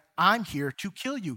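plain

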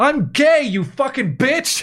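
outraged, furious shriek, very high pitched. Retelling a man yelling at a woman who was going after him, retelling a yell. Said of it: "he just yells at her".

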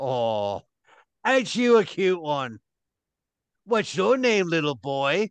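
patronizing giant's voice, sweetly talking down. Voicing a Goliath kneeling to a player's eye level: voicing a Goliath. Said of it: "you're saying this to the Goliath?".

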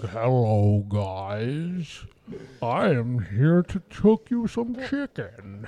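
deep, very slow creature voice, "guys" drawn out. Imagining a podcast guest greeting everyone on arrival: Jabba the Hutt voice. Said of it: "Jabba the Hutt, just wiggling his way out".

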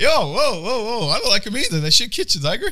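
very high, very loud, shrill shouting. Retelling own reply to a screaming person on a call: imitating own past reply. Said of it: "And I'm like".

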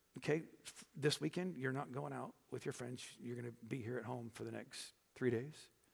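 calm, even tone, not yelling. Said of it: "say it in a voice just like this".

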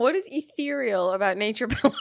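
uncontrollable laughing. Starting the movie, asking about a phrase: can't stop laughing. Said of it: "I can't stop laughing".

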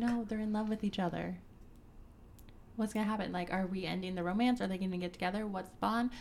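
normal talking voice

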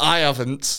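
"I" strongly stressed, rest of words plain. Repeating how someone just answered, with stress on i. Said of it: "you put the stress then on the I. So you went".

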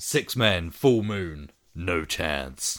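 put-on American accent, very slow and drawn out. Reading out a British film's tagline: American accent. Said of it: "I said that with an American accent".

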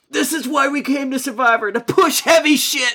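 shrill, high, fired-up wild-man yell. Quoting a contestant from the episode: imitating George yelling.

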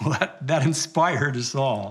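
ordinary delivery

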